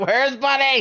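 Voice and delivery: shrill, frantic calling out, very high and loud. Telling friends about needing warmth and looking for bunny: retelling a frantic shout. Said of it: "That's why I was like".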